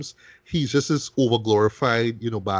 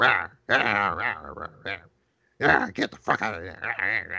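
put-on withered, grumbling, worn-out old mobster voice; 3 semitones lower than usual. Describing an actor's portrayal of an aged gangster, grumbling Al Capone impression. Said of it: "grumbles and talks like".

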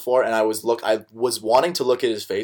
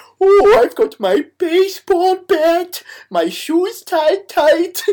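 goofy voice pitched way up, stretched slow. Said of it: "my Adam Sandler Bear".

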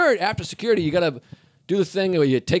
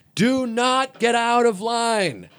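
very slowly spelled-out, drawn-out yell, pitched up; 6 semitones higher than usual. In a line of people about to miss their flights, retelling the cop yelling. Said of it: "The cop starts yelling".

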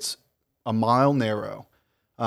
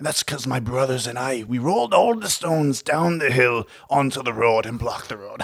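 put-on Irish accent. Telling a story in character about where he grew up, in a put-on irish accent. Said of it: "this is more of an Irish accent".

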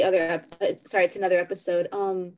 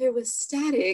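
tiny little voice piping up; 4 semitones higher, 3 dB quieter than usual. Retelling what a guy on the show said, in a little voice. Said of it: "you just hear this little voice".

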